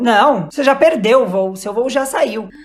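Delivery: plain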